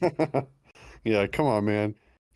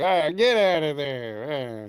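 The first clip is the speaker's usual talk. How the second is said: put-on very slow, shrill, drawn-out old woman voice; 4 semitones higher than usual. Describing a woman who yells at her dog, imitating her: shrill old lady voice. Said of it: "Does she sound like an old lady?".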